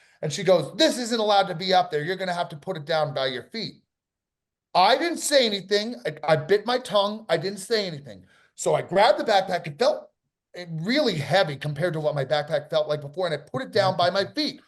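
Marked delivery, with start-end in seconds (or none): 0.8-3.8 put-on rude delivery. Retelling what a stewardess said to them: imitating someone speaking rudely. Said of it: "the woman says very rudely to me".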